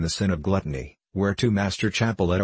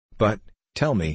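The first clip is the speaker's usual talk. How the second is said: plain reading voice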